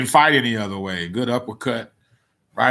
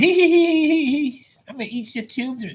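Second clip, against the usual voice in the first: very high, squeaky, tittering voice. Imagining a Mike Tyson opponent hearing him at night, high-pitched Mike Tyson voice. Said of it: "Hearing this high pitched voice".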